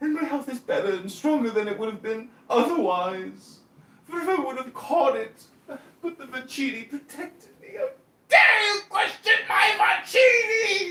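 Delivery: mocking put-on English accent. Acting out the mockery once used in online rooms: mocking in a put-on English accent. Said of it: "the mockery".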